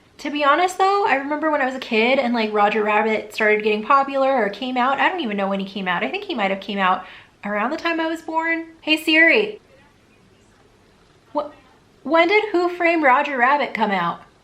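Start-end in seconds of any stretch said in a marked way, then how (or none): 8.8-14.2 raised, loud yelling voice. Asking a phone assistant across the room a question, yelling across the room. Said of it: "That's why I'm yelling".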